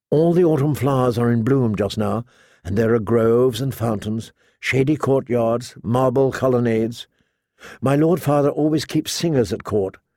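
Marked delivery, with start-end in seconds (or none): none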